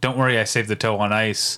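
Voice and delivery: ordinary talk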